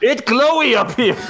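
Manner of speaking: very high-pitched, far-carrying yell. A character leans over a cavern shaft and calls down it: yelling down a shaft. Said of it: "and yells".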